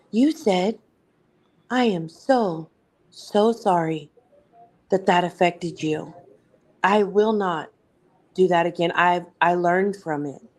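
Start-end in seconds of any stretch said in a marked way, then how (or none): 1.8-10.4 sugar-sweet, gentle, honeyed voice. Reminding a friend of her earlier words, imitating her soft, sweet voice. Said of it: "in a soft, sweet, quiet voice".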